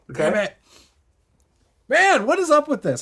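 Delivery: hiccuping, slightly high-pitched talk. Breaking off from running the game, annoyed: having the hiccups. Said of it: "I got the hiccups now".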